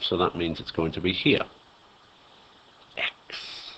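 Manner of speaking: whispered, barely audible, hushed and breathy. Labelling carbon x while explaining a reaction step by step, whispering. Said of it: "I don't know why I'm whispering like that".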